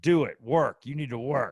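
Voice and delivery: put-on harsh, demanding man's voice. Describing a hardcore man from a different era, quoting him: imitating a demanding man. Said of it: "He's like".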